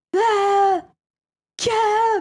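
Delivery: very high, loud, panicked, terrified screaming.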